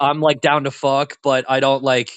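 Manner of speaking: ordinary talk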